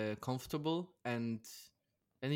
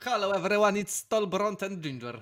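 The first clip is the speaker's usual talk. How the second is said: loud, put-on Polish accent; 7 semitones higher, 6 dB louder than usual. Host opens a new channel episode, in a put-on Polish accent. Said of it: "I start talking like this because I'm in Poland".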